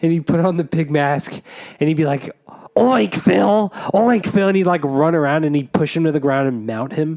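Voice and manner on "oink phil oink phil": strange, high, slow, drawn-out put-on voice. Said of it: "this weird, like, voice".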